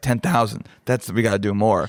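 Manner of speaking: plain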